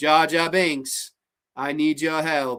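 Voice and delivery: put-on, flat, monotone acting voice. Mocking an actress's flat delivery of a line: monotone Natalie Portman impression. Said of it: "Natalie Portman is very monotone".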